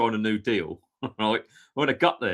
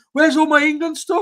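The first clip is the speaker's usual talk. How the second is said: mock child crying, higher and louder; 9 dB louder than usual. Retelling running into his mum's bedroom as a child after a dream: imitating himself crying as a child. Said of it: "I ran into my mum's bedroom crying, going".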